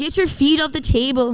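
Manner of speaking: put-on Scottish-accented voice. Asking the other speaker to do scottish, then demonstrating it, in a scottish accent. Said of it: "can you do Scottish? It's like".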